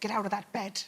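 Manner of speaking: weak, bad Irish accent, very low and hushed. Asked about accents, the guest imitates their irish mum's accent. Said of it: "I can do my mum".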